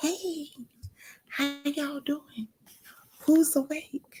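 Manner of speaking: low-volume voice. Greeting early-morning viewers while others are still asleep, hushed voice. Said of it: "I need to keep my voice down".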